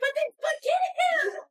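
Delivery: high, loud, frantic, lunatic-like screaming. Retelling a dog running off in a parking lot, reenacting frantic screaming. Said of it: "I was screaming like a lunatic".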